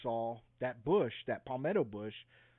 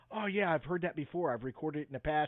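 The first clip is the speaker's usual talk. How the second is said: mock nonchalant, casual, offhand, playing it off; 4 semitones higher than usual. Retelling answering the crew after a loud roar: retelling playing it off casually. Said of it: "playing it off like this is normal".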